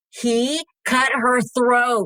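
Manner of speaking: furious, angry, high-pitched yelled outburst. Speaker recounts a man yelling at a pastor, imitating someone yelling. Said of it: "And so he just yells".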